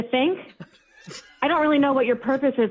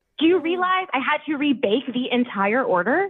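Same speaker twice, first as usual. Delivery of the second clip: ordinary talk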